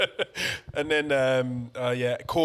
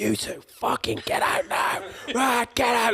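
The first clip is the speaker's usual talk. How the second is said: shrill screaming, pitched very high; 10 semitones higher than usual. Retelling how bar staff threw them out the next night, imitating someone screaming. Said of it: "Like screaming at us".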